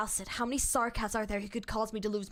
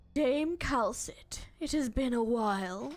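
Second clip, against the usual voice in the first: put-on elderly character voice. Voicing a peculiar-looking elder for fun, in a put-on older voice. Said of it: "I'm going to do an older voice for this".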